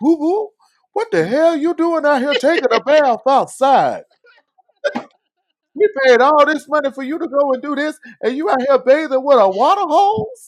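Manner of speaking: shrill, very high, very loud grandpa voice. Retelling what grandpa said when the speaker was hosed down outside; grandpa impression. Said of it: "That's my grandpa impression".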